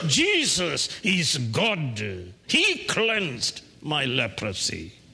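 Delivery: joyful cry with swooping pitch. Retelling the healed leper's words, acting out him crying out. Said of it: "So he cried out".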